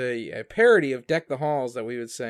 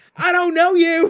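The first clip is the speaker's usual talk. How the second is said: put-on cartoon character voice, higher and louder; 10 dB louder than usual. Retelling a character doing a Bobby Hill impression. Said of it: "doing his best Bobby Hill impression".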